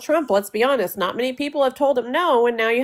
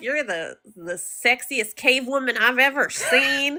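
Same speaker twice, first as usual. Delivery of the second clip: put-on slow hillbilly drawl. Retelling what a man said when he called her, in a hillbilly accent. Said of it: "the hillbilly accent".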